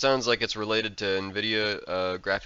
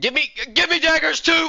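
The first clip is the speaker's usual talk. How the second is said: very high, very loud, shrill, demanding yell; 9 dB louder than usual. Developer discussing an upcoming update breaks off to shout again, yelling. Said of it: "now I'll stop yelling".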